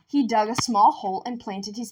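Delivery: ordinary delivery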